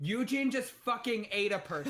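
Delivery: huge bellowing, booming shout, loud and high. A player's character shouts at the start of their turn, big booming shout. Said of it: "in my big booming voice, I'm just gonna shout".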